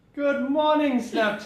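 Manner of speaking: very loud, booming, enthusiastic, high-pitched. Greeting snapchat viewers first thing in the morning, very loud greeting. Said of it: "That was so loud".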